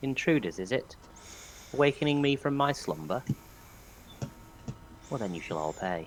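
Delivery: very quiet, hushed, menacing, threatening woman's voice. Game master voices a being speaking telepathically to intruders who woke it: feminine voice. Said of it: "a feminine voice that just goes".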